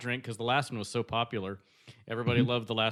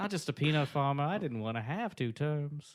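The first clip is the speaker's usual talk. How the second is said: put-on Southern US accent; 3 semitones higher, 4 dB quieter than usual. Doing a Jimmy Carter impression that drifts from Bill Clinton: Jimmy Carter voice. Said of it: "it's very close to my Jimmy Carter".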